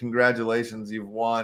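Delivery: plain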